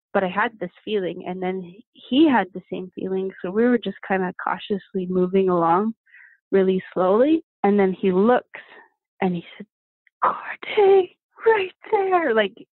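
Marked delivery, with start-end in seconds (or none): 10.2-12.3 put-on whisper, higher pitch. Retelling a companion pointing out a bear: imitating Ryan whispering. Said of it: "he whispered, like, as best he could".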